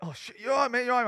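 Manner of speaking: put-on panicked voice. Retelling how the driver who hit him came round: imitating a panicking driver. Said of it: "he came round panicking".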